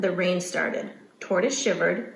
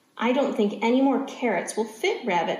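ordinary delivery

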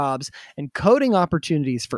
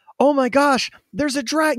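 put-on, very high, shouted call-out; 13 semitones higher than usual. A speaker recalls someone outside a bar spotting a Dragonite, retelling someone yelling. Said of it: "someone yelling".

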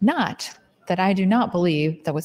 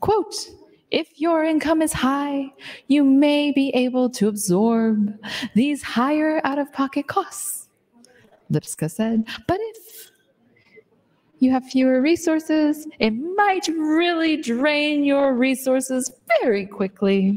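theatrical, interpretive, pitched-up dramatic reading; 7 semitones higher than usual. Reading an insulin article aloud while trying out tones: dramatic reading. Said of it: "dramatic interpretation".

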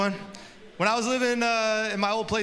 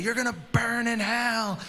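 mock, angry, heckling-style screaming; 2 semitones higher than usual. Retelling a protester heckling girls going into a clinic, imitating someone screaming. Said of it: "he's just screaming at them".

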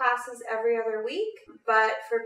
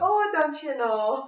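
put-on Minnesota accent, pitched higher; 5 semitones higher, 3 dB louder than usual. Chatting about which accents they can do, in a Minnesota accent. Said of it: "I can do, like, Minnesota".

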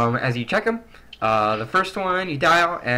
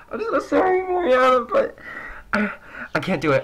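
put-on woman's sobbing, much higher and slower; 12 semitones higher than usual. Retelling a phone call where Kelly is crying: imitating Kelly bawling. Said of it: "she's crying, bawling her eyes out".

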